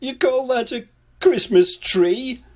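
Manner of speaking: astonished exclamation, high and loud. Mr. Worry reacts to Little Miss Scatterbrain's decorated hat stand: very surprised. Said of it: "very surprised to see a hat stand".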